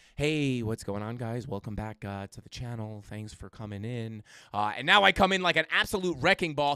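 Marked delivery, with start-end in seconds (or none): 0.2-4.2 listless, low-energy, very low and hushed. Retelling how the first stream sounded: imitating own old low-energy intro. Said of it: "because it was so low energy".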